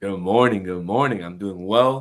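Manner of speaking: deep AM morning radio announcer delivery. Answering a host's on-air morning greeting, in a morning AM radio voice. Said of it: "A M radio voice going on".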